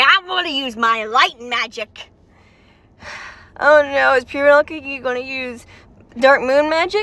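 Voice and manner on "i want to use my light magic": plain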